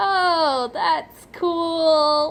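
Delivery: forced, insincere friendliness. Retelling answering a man showing a photo of his band, in a fake-nice voice. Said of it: "fake smile, fake voice, trying to be nice".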